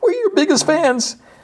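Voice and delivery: very high, squeaky, high-pitched squeal. Retelling what a man in a story said, imitating him squealing. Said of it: "And the dude squeals like".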